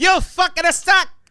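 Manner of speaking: put-on Italian accent. Joking about throwing tomatoes at a comedian's special: put-on Italian accent. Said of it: "Just the Italian accent while I'm throwing it".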